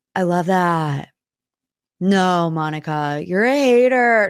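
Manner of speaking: raspy, gravelly voice like a heavy smoker. Trying again at an impression from the reunion: Lisa Barlow impression. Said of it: "can do a Lisa Barlow impression".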